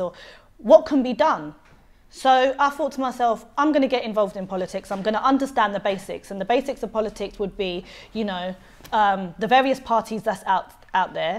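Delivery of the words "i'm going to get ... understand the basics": plain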